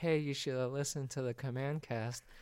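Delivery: nervous, uneasy, self-conscious put-on voice. Co-host retelling what he told a new Commander player, put-on nervous voice. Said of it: "Why'd you put that voice on".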